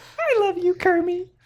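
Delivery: very high, loud, full diva voice. Joking around on a podcast about Kermit, in Miss Piggy voice. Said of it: "It's my Miss Piggy".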